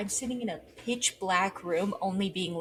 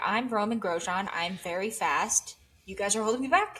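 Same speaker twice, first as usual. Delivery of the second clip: ordinary delivery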